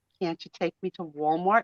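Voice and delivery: put-on soft, sad, babyish pleading voice. Retelling your reply when he asked about going home, in a put-on sad baby voice. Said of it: "I put on my baby sad voice".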